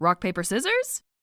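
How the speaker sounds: usual speaking voice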